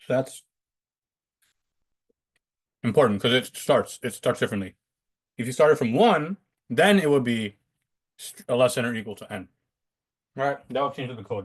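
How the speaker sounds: speaking through a mouthful while chewing. Explaining code to the guys in chat, talking while chewing. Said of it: "I'm just chewing".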